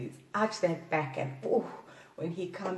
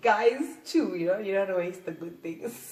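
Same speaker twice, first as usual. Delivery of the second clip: talking through giggles, giggly and laughing; 3 dB louder than usual. A video host talks to viewers, giggling while talking. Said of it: "Sorry, I'm giggling so much".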